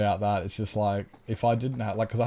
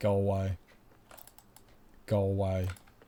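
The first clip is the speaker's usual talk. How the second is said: put-on grumpy brush-off tone. Retelling own mood after streaming: imitating own grumpy off-stream self. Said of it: "I get out of stream and I'm just like".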